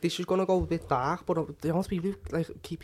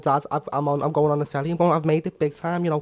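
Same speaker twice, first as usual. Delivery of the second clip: plain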